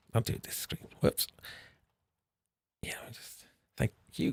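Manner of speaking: whispering. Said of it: "the whispering into the microphone".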